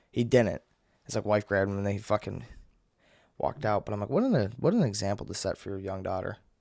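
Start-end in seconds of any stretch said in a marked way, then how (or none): none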